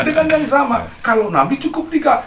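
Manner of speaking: high, loud delivery while laughing.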